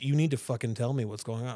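normal talking voice

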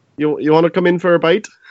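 put-on Minnesota accent. Trying a Minnesota accent in a comedic bit; it comes out a bit Irish. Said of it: "That's a little too Irish".

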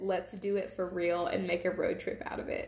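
ordinary delivery

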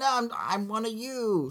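high, slow, soft pleading in disguised robot voice.

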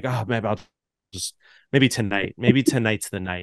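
mock dead-serious, very grim and resigned delivery. Retelling what a coworker said at the bar: imitating a grim tone. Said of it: "he's just very grimly like".

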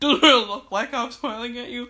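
very loud, put-on serious, stern tone. Told they are smiling while threatening to yell, the speaker pushes back in a mock-stern voice. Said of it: "Even that voice just shows".

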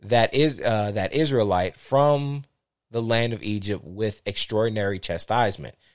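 ordinary talk

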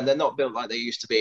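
ordinary delivery

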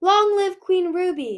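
high, rallying, shouted acclaim. After a queen's neck is snapped, someone in the dragon crowd calls out, shouted. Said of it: "someone shouted".

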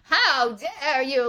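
put-on odd, weird old woman voice. Speaker pitches a bit about shaming an audience: weird old woman voice. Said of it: "Like a really weird old woman voice".

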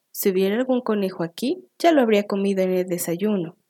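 ordinary delivery, nothing marked

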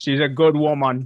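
loud, half-formed, vague put-on Jamaican accent. Praising another speaker's mother, vague attempt at Jamaican accent. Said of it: "I don't know what accent I was trying to do there".

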